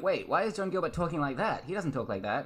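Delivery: ordinary delivery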